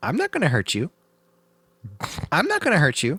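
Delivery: very high, swooping parrot voice. Describing a parrot that would say this to its owner: talking parrot voice. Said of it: "parrot because it would say".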